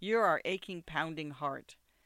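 ordinary talk

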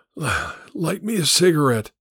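speaking with a wheeze. Narrator voicing a stranger lying in a roadside ditch, speaking to Emma, wheezing. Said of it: "he wheezed".

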